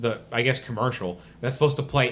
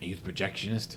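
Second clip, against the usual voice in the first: dropped low, creepy voice; 5 semitones lower, 10 dB quieter than usual. Retelling a movie scene, quoting the character who asks: creepy John Boy voice. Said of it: "He's got this real creepy voice".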